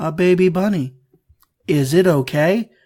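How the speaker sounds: mock blank, emotionless, flat monotone. Retelling how the ditzy one reacted to a stuffed bunny landing in a fire: retelling a deadpan line.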